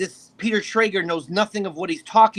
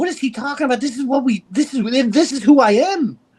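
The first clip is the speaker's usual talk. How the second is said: worked-up, excitable, agitated tone, higher pitch; 5 semitones higher than usual. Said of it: "he's excitable".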